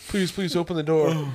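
put-on, high pleading voice on the verge of tears. Retelling what a kid poking his head through the window said, imitating someone about to cry. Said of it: "he's like about to cry".

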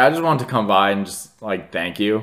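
ordinary talk

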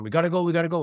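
put-on screaming. Recounting finding a downed firefighter in the house's hallway; retelling a scream. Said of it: "So I'm screaming to him".

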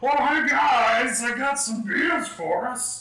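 dopey goofy voice, very high and slow. Retelling walking up to their hotel room with beer, in a put-on voice. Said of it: "if you're using that voice".

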